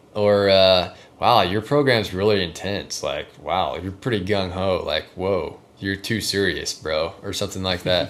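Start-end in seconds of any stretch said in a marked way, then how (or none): none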